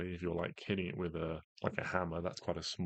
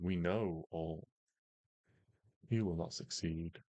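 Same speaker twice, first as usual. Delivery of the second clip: echoing three-voice chorus, slower. A voice speaks inside the listener's head, urging them to give up: echoing voice of three. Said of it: "This now echoing voice, three voices just inside your head".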